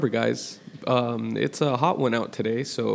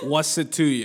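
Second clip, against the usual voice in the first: mock New York accent, higher pitch; 4 semitones higher than usual. Joking about a show title: put-on New York accent. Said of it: "I can kinda do that with New York".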